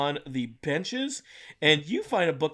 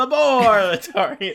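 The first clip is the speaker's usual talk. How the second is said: put-on, spooky vampire voice, raised and pitched-up; 7 semitones higher, 10 dB louder than usual. Repeating the word just pronounced, vampire voice. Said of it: "in a vampire voice".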